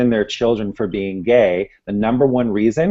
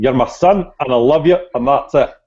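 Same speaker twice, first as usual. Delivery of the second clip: put-on heavy, laid-on Scottish accent throughout; 4 semitones higher, 4 dB louder than usual. Quoting a late father's words to his son, thick Scottish accent. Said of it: "said with his thick Scottish accent".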